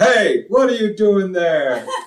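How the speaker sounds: sudden, loud, high shout. Retelling a cop shining a flashlight on him, the speaker imitates a loud voice. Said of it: "this loud voice is like".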